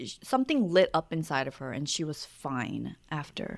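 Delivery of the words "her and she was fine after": normal talking voice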